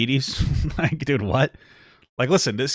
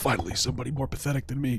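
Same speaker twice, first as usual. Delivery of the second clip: put-on sick child voice, quieter; 10 dB quieter than usual. Imagining the kid's reply to a visitor, imitating a Make-A-Wish kid. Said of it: "And the kid's like".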